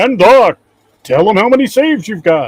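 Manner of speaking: booming, very loud game-show announcer call. Asking Doc for his save count in a Don Pardo announcer voice. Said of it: "in my de- best Don Pardo voice".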